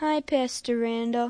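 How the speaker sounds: unhappy, glum, low, downcast voice. [name] greets Pastor Randall while visiting: not sounding happy. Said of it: "You don't sound very happy".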